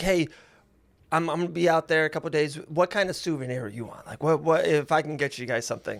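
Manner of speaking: usual speaking voice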